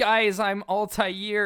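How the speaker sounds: sarcastic, very high and loud voice. Recalling what the listener said at youth group, imitating a sarcastic remark. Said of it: "you were being like sarcastic about it".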